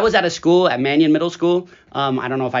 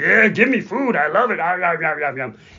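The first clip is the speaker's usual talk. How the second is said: gobbling, monster-like put-on voice. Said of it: "it's like the Cookie Monster".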